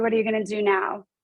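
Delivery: normal talking voice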